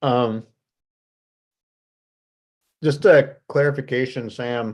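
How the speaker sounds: very slow speech while chewing a mouthful. Called on in a meeting, asking for a clarification while eating an apple. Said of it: "caught me eating an apple".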